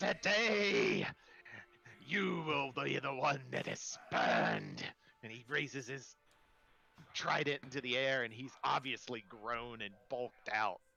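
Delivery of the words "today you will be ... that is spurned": slow, croaking bullfrog voice with swooping pitch. Narrating a story, voicing the bullfrog Bradley as he croaks out his line. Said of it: "he croaks out".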